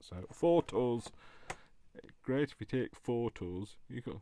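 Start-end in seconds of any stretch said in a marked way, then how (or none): 0.3-1.0 loud, put-on northern British accent. Speaker repeats a pun for the listener, in a northern British accent. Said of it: "it's better if you say it with a um a northern British accent".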